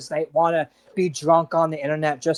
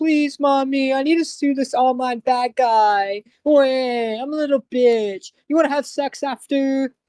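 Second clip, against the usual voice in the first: mock whiny voice, higher; 9 semitones higher, 4 dB louder than usual. Imagining someone asking his mom for money to sue: mocking imitation of a whiny son. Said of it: "he's probably asking his mom".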